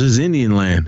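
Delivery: plain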